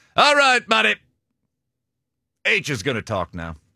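distinctive high, swooping way of talking. Imitating how a former co-worker talked: imitating Jim Brinson. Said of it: "He talked like that all the time".

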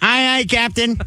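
high-pitched cartoon voice. Urged by friends to say it, the speaker answers: SpongeBob voice. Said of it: "You kind of sound like SpongeBob".

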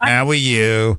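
speaking with a New York accent. Contrasting a New York greeting with a Utah one: imitating a New York greeting. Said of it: "if it was from New York".

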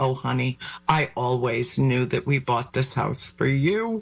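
normal talking voice

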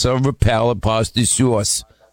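New York accent vowels on "silver palate pasta sauce".

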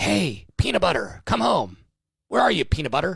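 pretend whispering. Picturing the pet tracker crouching behind a hedge calling a lost dog, imagined whisper calling a dog. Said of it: "just whispering".

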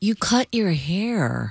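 disappointed, let-down tone, "hair" drawn out. Asked to give a line disappointed during a tone exercise, disappointed tone. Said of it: "Give me disappointed".

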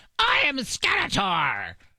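very high, swooping, sing-song cartoon voice. Talking about who plays Skeletor in the new He-Man movie, do a Skeletor voice. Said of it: "he does have the right voice for Skeletor".

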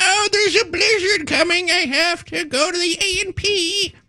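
put-on elderly Midwest lady voice, very high. Teasing the other speaker for sounding like a 97-year-old midwestern woman voice. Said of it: "you sound like a 97-year-old woman in the Midwest".

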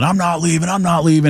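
put-on, toned-down hollering, repeated twice. Telling how a man refused to leave when asked, retelling a yell. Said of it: "he starts yelling".

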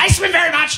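high-pitched, angry robot voice.

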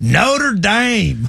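exaggerated country accent. Showing how they pronounce the name, in an exaggerated country accent. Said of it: "we just countryfy it as hard as we can".

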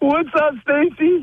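high, nervous laughing voice. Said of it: "He's got the nervous laugh".

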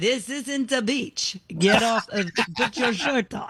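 exaggerated stage Italian accent. Asked to do it again, the speaker repeats the quote in an Italian accent. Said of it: "what's your Italian accent? Do it again".

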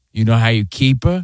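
put-on mob-movie gangster voice. Quoting the man who pinched his cheek, in a mob-movie gangster voice. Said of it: "Like something out of a mob movie".

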